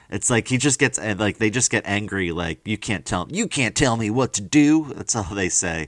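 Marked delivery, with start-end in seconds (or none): 2.6-4.9 put-on slow, dopey Southern accent. Imitating people who get angry at being told what to do: southern accent. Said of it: "I don't know why I keep doing a Southern accent. It's supposed to be a Boston JFK accent".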